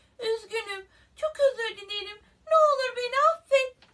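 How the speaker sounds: very loud, high-pitched, frightened, begging tone. The mouse answers the roaring, angry lion: frightened. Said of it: "Fare korkmuştu".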